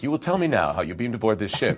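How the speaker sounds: put-on very stern and serious delivery. Retelling own line from a movie scene: imitating own stern, serious delivery. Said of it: "I'm being very stern and serious".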